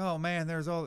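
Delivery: put-on Southern American accent. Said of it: "I love that you become Southern again".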